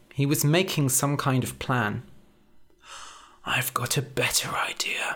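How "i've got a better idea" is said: hushed, soft, breathy half-whispered murmur. After silently making a plan, he murmurs to his companion. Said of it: "he murmured".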